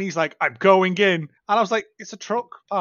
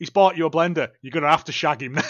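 speaking in grandad voice; 3 semitones lower than usual. Retelling a made-up line from Grandad about a new blender: imitating Grandad. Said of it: "And Grandad's like".

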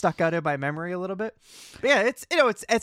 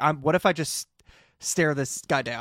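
ordinary talk

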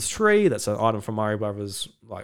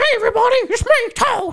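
very high, loud, squeaky voice; 6 dB louder than usual. Asked what Toad sounds like, the speaker tries a Toad impression. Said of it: "What's my Toad impression?".

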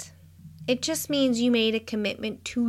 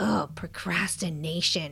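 sour, disgusted, dismissive negative tone; 5 semitones lower, 5 dB quieter than usual. A speaker shows how to say a word, in a negative tone. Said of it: "Say it in a negative tone".

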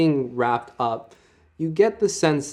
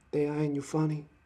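whispered voice, quieter; 3 semitones higher, 9 dB quieter than usual. Voicing a whisper that comes up in the back of the head: whispering voice in your head. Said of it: "The whisper comes up in the back of your head".

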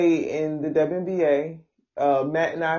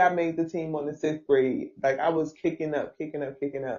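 ordinary talk

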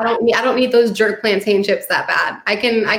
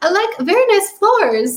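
very high, clumsy put-on Swedish accent; 11 semitones higher than usual. Retelling what a Swedish mover said, imitating [name]'s bad Swedish accent. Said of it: "I'm not good at accents".

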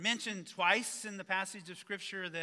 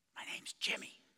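put-on child's whisper, quieter. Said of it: "a voice answered with a whisper".

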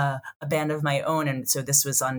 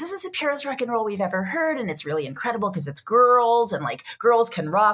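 heavy, high, swooping sarcastic ironic tone; 7 semitones higher than usual. Retelling how nineties listeners praised the band: imitating critics in heavy scare quotes. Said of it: "heavy, heavy scare quotes".

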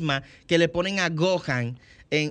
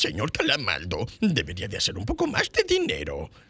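deep cartoon crab voice with swooping, swinging pitch; 9 semitones lower than usual. Explaining how they learned the voice from a documentary, demonstrating a low-toned Don Cangrejo voice. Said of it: "yo la hice un poquito más con el tono bajito".

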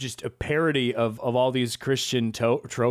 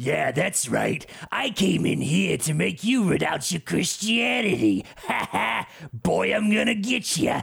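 put-on gravelly, creaky voice, pitched up; 6 semitones higher than usual. Talking about a film, imitating its titular infidel: imitating the infidel's gravel voice. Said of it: "I love the gravel voice".

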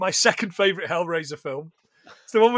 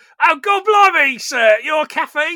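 high, down-to-earth, unposh butler voice with no airs; 8 semitones higher, 4 dB louder than usual. Describing butler Jenkins as he leaves, doing a non-posh Jenkins voice. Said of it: "he's not very posh".

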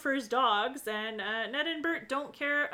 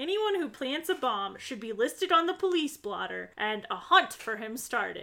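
plain

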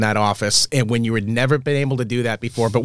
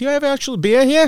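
very high-pitched put-on bar regular voice; 13 semitones higher than usual. Retelling serving beer to a visitor, the speaker quotes him in a Cliff impression. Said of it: "you sound just like".

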